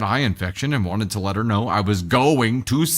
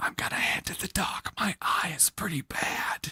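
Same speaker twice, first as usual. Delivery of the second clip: soft, gentle whisper, barely voiced; 8 semitones higher, 10 dB quieter than usual. Retelling gently waking a sleeping wife to say he's leaving: retelling a whisper. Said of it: "say in a whisper".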